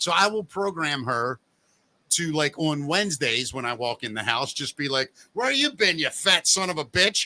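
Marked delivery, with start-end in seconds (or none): 5.3-7.3 angry, harsh berating scolding tone. Acting out a programmed AI girlfriend greeting him at home: berating. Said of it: "she berates me".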